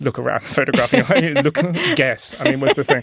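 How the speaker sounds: laughing sarcastic voice.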